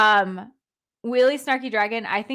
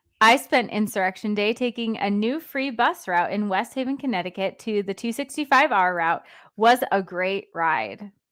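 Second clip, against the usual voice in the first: usual speaking voice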